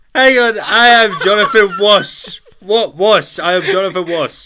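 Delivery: very high, very loud bellow with a speech impediment. Doing an impression for the others: Michael Caine voice with speech impediment. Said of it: "giving Michael Caine a speech impediment".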